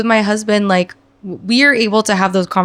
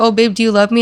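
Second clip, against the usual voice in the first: put-on affectionate, lovey-dovey cooing. Retelling a partner's affectionate question: imitating a lovey-dovey partner. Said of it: "he was being all lovey-dovey with me".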